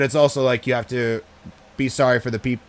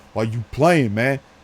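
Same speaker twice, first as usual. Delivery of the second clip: put-on angry voice getting mad. Retelling a man's reply when the bar owner asked him to stop: imitating someone getting mad. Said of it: "getting all mad".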